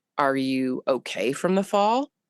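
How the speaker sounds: ordinary talk, nothing marked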